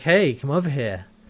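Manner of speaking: put-on flirty tone. Retelling Chiana's approach to a guard in armor: imitating a flirty approach. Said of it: "a typical kind of flirty approach".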